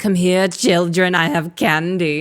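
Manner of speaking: big, loud, stretched-out delivery. Showing how to call the children in the Mommy Monster game: Mommy Monster voice. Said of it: "when I go back to my normal voice".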